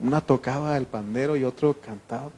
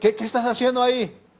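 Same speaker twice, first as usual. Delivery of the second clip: mock very high, raised shout, as from afar; 11 semitones higher, 5 dB louder than usual. Retelling catching a young girl with a boyfriend: imitating own shout from afar. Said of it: "Y le grité de lejos".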